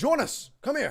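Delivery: shouting. Voicing a character calling across to someone named Jonas: yelling a name. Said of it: "he kinda yells".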